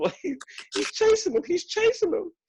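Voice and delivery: high-pitched fake tearful crying. Retelling how neighbors ran up and spoke: imitating someone crying. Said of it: "come running up to me crying and said".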